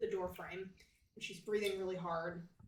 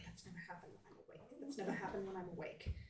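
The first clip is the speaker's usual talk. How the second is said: soft, fast mutter. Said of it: "just kinda mutter to herself".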